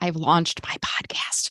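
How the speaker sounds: hushed, secretive whisper. Speaker leans forward to let the audience in on a secret, whispered. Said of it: "I had to whisper".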